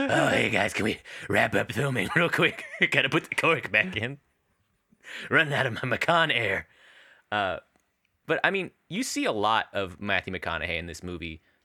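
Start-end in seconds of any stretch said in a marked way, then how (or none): 0.0-6.7 put-on breathless voice. Joking that the actor asks to stop filming: out-of-breath Matthew McConaughey impression. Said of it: "always just like".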